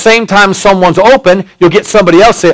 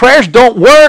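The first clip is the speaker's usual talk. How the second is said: usual speaking voice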